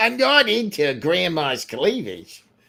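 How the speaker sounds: accent with Yiddish inflection.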